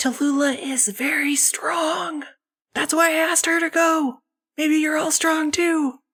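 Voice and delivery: very high theatrical stage whisper. Voicing a game character telling the players a secret: stage whisper. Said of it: "stage whispers to all of you".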